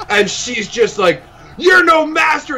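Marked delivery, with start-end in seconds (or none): 1.6-2.6 put-on soured, very high snarling old lady voice. Retelling what an old lady said to the speaker in a mall, imitating a snarling old lady. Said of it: "her face just immediately sours into a snarl".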